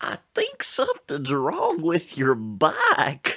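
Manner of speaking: put-on very loud, swooping, drawn-out country accent. Retelling what a scared bike passenger said: imitating Sir Isaac's country accent. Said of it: "He's talking in that country accent".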